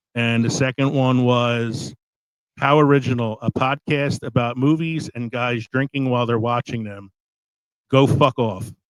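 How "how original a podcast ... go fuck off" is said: ordinary talk, nothing marked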